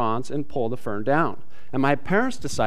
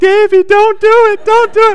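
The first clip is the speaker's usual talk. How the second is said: very high, loud, tearful crying; 13 dB louder than usual. Retelling a family story, acting out the brother pleading, imitating brother crying. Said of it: "my brother crying and going".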